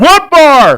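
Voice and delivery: very high, loud shouted yell. Retelling a heckle during a joke setup: imitating someone yelling. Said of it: "someone yells out".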